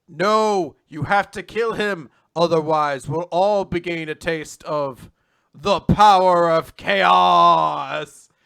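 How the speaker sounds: booming, very loud, slow, dramatic movie-line delivery. Retelling a story, acting out another person's line with dramatic movie-line delivery. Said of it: "almost like a like a movie line".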